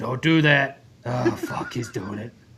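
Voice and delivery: put-on voice growing angry. Retelling how the voice in the film reacts: imitating a voice getting mad. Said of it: "when the voice would get mad".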